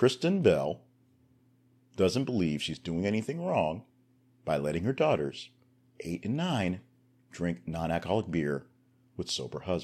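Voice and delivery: slow, deliberate, over-enunciated, every word spelled out. Host reading a news item aloud to listeners, slow, over-enunciated reading. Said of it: "Why am I reading it so enunciated and slowly?".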